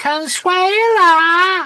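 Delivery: very high, stretched-out, drawn-out call. Retelling what people shout at them from Benidorm: imitating the Benidorm maid call. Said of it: "all year is a go".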